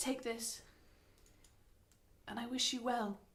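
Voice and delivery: confiding, voiced stage whisper, in character. Half-whispering to a tied-up boy while untying him: half-whispering in character. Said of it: "lean in and whisper to him and say".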